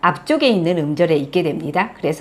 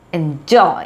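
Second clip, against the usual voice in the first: enjoy, second syllable joy stressed. Explaining english word stress in korean: enjoy with stress on joy. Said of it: "뒤에 joy에 강세가 오게 되죠".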